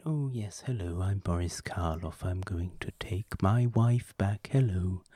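soft-spoken monotone voice with a lisp. Doing a Boris Karloff impression while praising his acting: Boris Karloff impression with lisp. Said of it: "He's very soft-spoken, he's very monotone, and he has the lisp".

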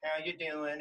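tiny, small, little-voiced tone. Retelling how the sister greeted the speaker: imitating sister's little tone. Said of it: "in her little tone".

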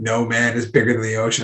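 ordinary talk

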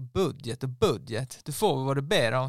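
put-on poorly done Skåne accent. Quoting a controller from southern Sweden during a funding talk, in a bad Skåne accent. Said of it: "det var min dåliga skånska".

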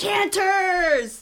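loud high-pitched yell. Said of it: "the other one shouted".

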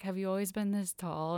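dreamy, far-off, mooning, dreamlike tone. Retelling a character's flirty line to another speaker: imitating a dreamy delivery. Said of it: "kinda dreamily says".

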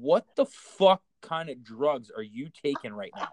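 put-on dead serious tone. Retelling questioning a friend about an alien sighting: imitating own dead serious tone. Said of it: "I looked at him dead serious".

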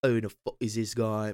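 botched, failed put-on Irish accent. Retelling old people staring at him in a bar, in a bad irish accent. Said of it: "They sound Irish. I fucked that up a little bit".

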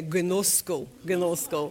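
put-on Russian accent on "gnosko". Showing the congregation how to say the word: russian accent. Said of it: "you may say it in a Russian accent".

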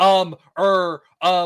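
loud, exaggerated stammer, each filler clearly enunciated. Retelling a character's reply: imitating over-the-top stumbling. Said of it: "very clearly enunciating the things".

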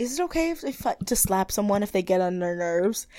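mimicked quiet speech. Retelling a remark someone made to another person: imitating someone speaking quietly. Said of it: "she says really quietly".

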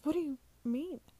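stuttering, stammering. Narrating a character answering a mysterious voice, stuttering. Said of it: "I stuttered".

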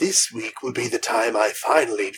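put-on horror villain voice. Trying out an idea about Sasquatches with another speaker, make it a very Vincent Price voice. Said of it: "very Vincent Pricey".

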